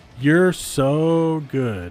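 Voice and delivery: slow, stretched, drawn-out stress on so.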